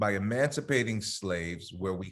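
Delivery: plain reading voice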